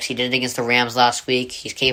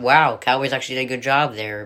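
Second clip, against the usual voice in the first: usual speaking voice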